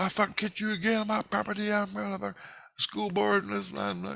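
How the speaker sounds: furious yelling, pitched very high. Retelling a man who came out and chased him: imitating a man yelling. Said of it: "This guy's yelling at me".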